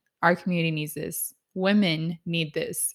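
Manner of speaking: plain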